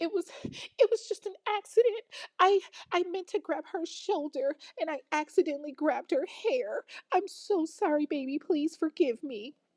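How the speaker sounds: put-on, uncontrollable, high-pitched sobbing. Retelling how a woman lied and apologized, imitating someone crying. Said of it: "She's crying uncontrollably".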